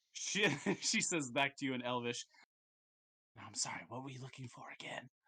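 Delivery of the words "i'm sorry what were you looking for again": very quiet, barely-there, quick, hushed whisper. A game master voices a character answering the players, in the softest whisper. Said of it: "Like the softest whisper".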